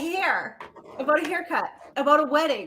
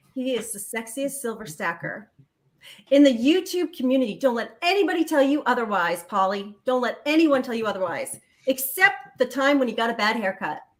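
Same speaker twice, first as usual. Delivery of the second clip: plain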